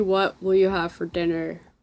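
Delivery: ordinary delivery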